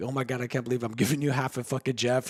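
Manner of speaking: put-on laughing while talking. Retelling someone handing over ashes in a bag: imitating someone laughing. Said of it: "laughed, like".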